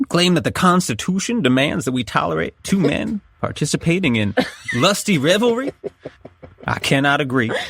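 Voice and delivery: put-on American Southern accent throughout. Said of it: "you have a Southern accent".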